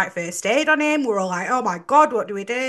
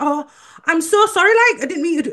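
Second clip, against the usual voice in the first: put-on Newcastle Geordie accent, pitched up; 6 semitones higher, 4 dB louder than usual. Retelling how a man apologized for spilling champagne, in a Geordie accent. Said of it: "I'm not going to do a Geordie accent again".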